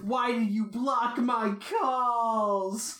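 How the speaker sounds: high, slow, very drawn-out sobbing. Recapping a story and acting out Shukichi's line; imitating Shukichi crying. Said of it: "Shukichi's like crying and saying".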